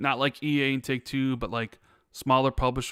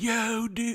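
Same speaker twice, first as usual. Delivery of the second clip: put-on California surfer-dude accent, much higher; 9 semitones higher than usual. Speaker contrasting regional American accents, California surfer-dude voice. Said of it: "the Western, like".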